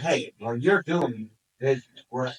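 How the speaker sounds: plain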